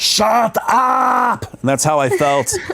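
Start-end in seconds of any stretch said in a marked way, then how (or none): 0.0-1.5 put-on heavy German accent, voice pitched very high. Quoting a movie scene where kids yell at him: Arnold Schwarzenegger German accent. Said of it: "in his German, thick German accent, he's like".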